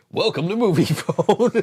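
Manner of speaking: movie announcer voice. Joking with friends about reading DVD boxes aloud, in a Moviefone announcer voice. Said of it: "the movie call guy".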